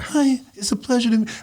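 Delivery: very high-pitched, soft-toned voice. Retelling meeting Mike and his greeting, imitating Mike's soft voice. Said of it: "Mike's like got that soft voice".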